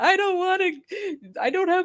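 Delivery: mock very high, panicked, tearful sobbing. Telling a story about the cops, the speaker is retelling bursting into tears. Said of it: "bursting into tears".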